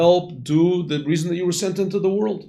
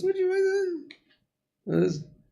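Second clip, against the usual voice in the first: put-on very high, soft, childlike little-girl voice; 13 semitones higher, 6 dB quieter than usual. Retelling how a little girl started asking people, in a high little-girl voice. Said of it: "and she has this high voice".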